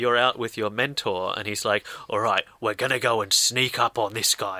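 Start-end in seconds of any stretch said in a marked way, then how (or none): 2.1-4.6 put-on gruff voice with British accent. Retelling what the mentor says on the first hooded mission: imitating a gruff british mentor. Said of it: "I'm also very British and gruff".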